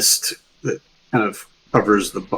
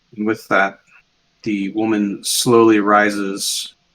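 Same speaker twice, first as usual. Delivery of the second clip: normal talking voice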